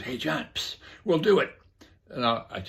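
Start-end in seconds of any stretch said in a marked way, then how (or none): 0.0-1.5 secretive, hushed stage whisper under the breath. Retelling how a contact at the United Nations half-whispered: imitating someone half-whispering. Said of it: "and he whispers".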